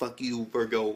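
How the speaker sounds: ordinary talk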